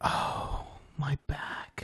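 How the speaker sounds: very soft, whispered, grumbling mutter under breath. Imitating people who complain under their breath to start a conversation: imitating muttering under breath. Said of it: "talk under their breath".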